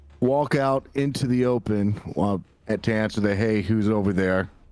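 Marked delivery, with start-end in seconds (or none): none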